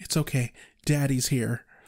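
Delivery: creepy put-on voice. Quoting the character Ted hugging Joyce: creepy Ted tone. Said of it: "the tone that he says that".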